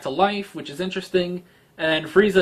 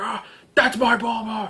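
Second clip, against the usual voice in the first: angry, fired-up outburst, raised pitch; 6 semitones higher than usual. Retelling a movie scene where Vegeta goes Super Saiyan: imitating angry Vegeta. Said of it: "he's all pissed off".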